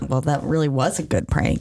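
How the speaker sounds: usual speaking voice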